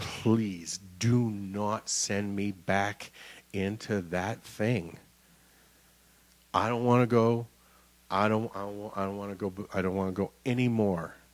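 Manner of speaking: desperate, tearful pleading voice. Retelling begging not to be sent back: imitating own past begging. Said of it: "and I was begging".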